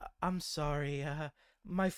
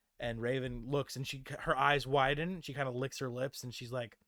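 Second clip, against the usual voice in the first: normal talking voice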